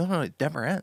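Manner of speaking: emphatic, dead certain tone. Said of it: "She was like".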